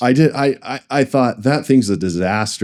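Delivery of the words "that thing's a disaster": ordinary delivery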